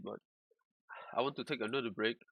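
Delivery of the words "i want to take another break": fast, quick, rattled-off speech. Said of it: "I'm talking, talking fast speed little bit".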